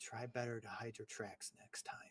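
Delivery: barely audible, very quiet, hushed whisper. Walking past Dana toward navigation, the character speaks to Dana: whispering. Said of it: "I'm going to whisper".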